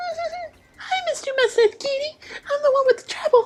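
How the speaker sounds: squeaky voice pitched way up high. Miss Mouse, the mysterious poster, speaks to Mister Mustache Kitty in a squeaky voice. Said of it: "Mouse, squeaks, makes sense".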